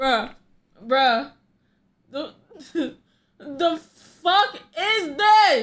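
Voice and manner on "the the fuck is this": stifling a laugh, higher and louder. Reacting to a strange voice message, holding back laughter. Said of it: "I'm trying not to laugh".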